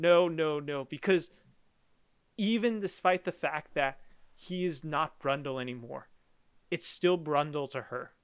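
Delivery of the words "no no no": put-on scream, much slower. Recounting a film scene, the speaker acts out Geena Davis screaming. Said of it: "Gina Davis is just screaming".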